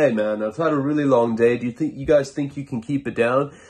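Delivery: put-on European accent. Retelling what a dad would say coming home to a party, imitating a European accent. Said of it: "a European accent".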